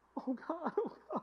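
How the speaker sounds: very high-pitched sobbing cry. Retelling a woman who could not catch her breath, imitating someone crying. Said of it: "She's just crying".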